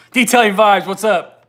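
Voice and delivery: loud, high, shouted yell. Speaker greets detailing vibes while talking to the audience, yelling. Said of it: "Sorry, I'm yelling".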